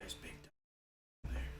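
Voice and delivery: very quiet, hushed, breathy whisper. Whispering an in-character line to the others at the table: whispering. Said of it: "I'm just gonna whisper".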